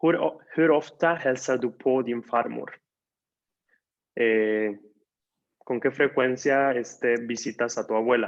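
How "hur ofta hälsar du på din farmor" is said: stress on på in hälsar på. Explaining a swedish verb in an example sentence: stress on på. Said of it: "aquí pronunciamos con el acento en po".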